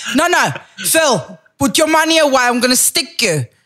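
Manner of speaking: aggressive South African accent. Acting out a South African refusing to let Phil pay, aggressive South African accent. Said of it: "and with this accent, it's like".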